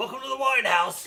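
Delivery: very high, very loud, raspy voice. Voicing an innkeeper welcoming guests: raspy smoker's voice. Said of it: "a voice raspy from years and years of smoking".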